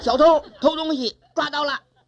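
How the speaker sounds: put-on old man voice, loud, high shout of "thief".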